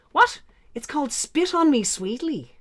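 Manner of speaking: mock South Dublin woman's voice. Retelling what the south dublin women said at a table: imitating a south dublin accent. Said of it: "they turned to each other and they went".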